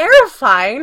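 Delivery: firm, very loud single word. [name] corrects Spencer's remark, firmly. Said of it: "corrected firmly".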